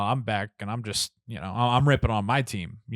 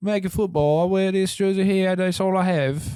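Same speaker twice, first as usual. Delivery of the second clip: loud, very high, bad fake British accent; 10 semitones higher, 5 dB louder than usual. Mimicking people at football games in London, in a bad British accent. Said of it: "So bad British accent".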